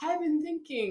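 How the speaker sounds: put-on very high, sloppy, slurred drunk voice. Retelling a drunk movie character's line: imitating slurred drunk speech. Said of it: "he's all slurry and drunk".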